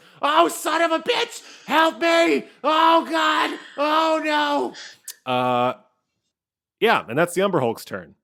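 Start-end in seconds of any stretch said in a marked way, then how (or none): 0.2-5.3 very high, very slow, drawn-out, desperate panicked screams. Voicing a character dangling over a monster pit: screaming in panic. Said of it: "and she screams".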